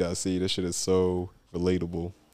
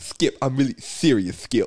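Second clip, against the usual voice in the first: put-on lisping sports pundit voice, higher and louder; 6 semitones higher, 4 dB louder than usual.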